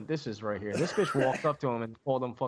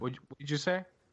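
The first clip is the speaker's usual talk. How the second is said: mock angry, pissed-off, confrontational put-on tone. Retelling how a wrestler reacted when called the wrong name: imitating a pissed-off reply. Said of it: "he got so fucking pissed".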